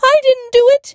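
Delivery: very high, loud, frightened shout. A boy pointed out in front of the class shouts back, shouting. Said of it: "he shouted".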